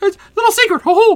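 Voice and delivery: high, squeaky cartoon voice. Joking around with the group, in a Mickey Mouse voice. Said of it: "I went full fucking Mickey Mouse there".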